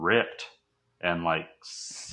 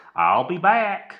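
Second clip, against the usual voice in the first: put-on belted high, Southern accent; 12 semitones higher, 6 dB louder than usual. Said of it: "They're like".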